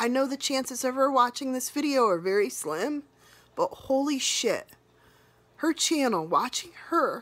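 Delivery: emotional voice on the verge of crying. Speaker talking about a channel they subscribe to, getting emotional, crying. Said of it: "I'm getting emotional".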